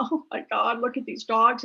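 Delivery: mock tearful bawling, as if crying hard. Retelling a visit to a dog shelter, imitating own bawling. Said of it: "So I was like bawling my eyes out".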